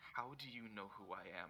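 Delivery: rattled, unsettled, shaken-up voice. Voicing a character who asks a hologram figure how it knows her: visibly shaken. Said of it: "she looks visibly shaken".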